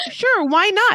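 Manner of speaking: delighted, eager, happy tone, very high. Retelling a character's reply after being asked: imitating a happy character. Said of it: "And look how happy he is".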